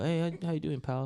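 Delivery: sounds like a forty-something man.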